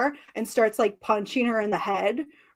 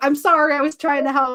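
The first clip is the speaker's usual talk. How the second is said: put-on apologetic voice, higher; 3 semitones higher, 4 dB louder than usual. Retelling how Rhea apologized to a crying Io, imitating Rhea apologizing. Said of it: "Rhea's just like".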